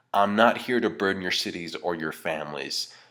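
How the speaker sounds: plain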